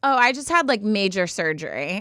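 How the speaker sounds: usual speaking voice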